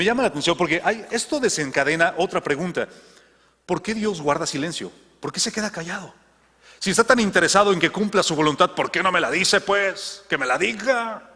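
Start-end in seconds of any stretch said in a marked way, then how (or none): 8.7-11.2 slow, put-on Mexican accent. Voicing a hypothetical complaint during a talk, with an added Mexican accent. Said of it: "Con acento mexicano agregado".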